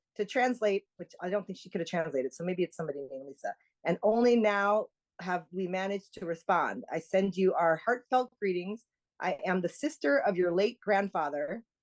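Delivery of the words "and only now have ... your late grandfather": ordinary delivery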